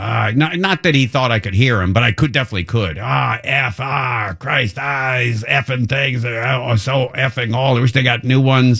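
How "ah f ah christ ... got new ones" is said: put-on cross, angry, swearing rant. Retelling how a worker swore while fixing a safe: imitating someone swearing. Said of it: "And then he starts swearing".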